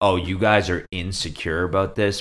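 plain

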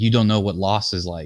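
normal talking voice

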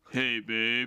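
put-on deepened voice, muffled as through a cup. Retelling how Frank called through his phone cup: Frank's cup-deepened voice. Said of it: "it really deepens his voice".

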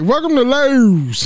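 put-on Baltimore accent. Retelling how James said welcome at Lowe's: imitating James's Baltimore accent. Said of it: "he got that Maryland, Baltimore accent".

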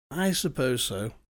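sleepy. Anthony answers Sylvia and suggests moving upstairs as the fire burns out; sleepy. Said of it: "Anthony spoke sleepily".

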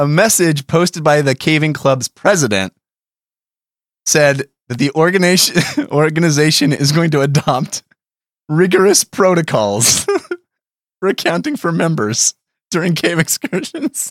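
talking through barely held giggles, laughing. Reading aloud the last line of a story, laughing while talking. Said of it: "I can't even say it without laughing".

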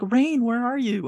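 loud yell at the full lungs. Recapping a scene where Danny is lost in a snowstorm, retelling Danny's yell. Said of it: "she's yelling like".

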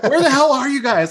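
high, loud, frantic, panicked yell.

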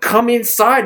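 high-pitched yelling.

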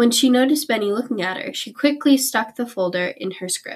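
ordinary delivery, nothing marked

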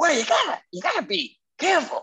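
bad celebrity voice, very high, pitch bouncing around. Retelling a scene from a fake pilot: bad Eddie Murphy impression. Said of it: "my bad Eddie Murphy impression".

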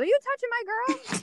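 mock teasing, joking, very high-pitched. Speaker retells a woman turning to her boyfriend at a family event: retelling a joking question. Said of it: "she jokingly turns to him and says".

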